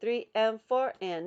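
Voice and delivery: loud voice. Counting a clapping rhythm for learners: louder counting on the claps. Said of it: "I made my voice louder when you're supposed to clap".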